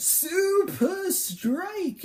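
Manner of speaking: very high, loud shout. Imagining the attack called out in Frankie's voice: Frankie voice. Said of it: "Frankie's voice being like".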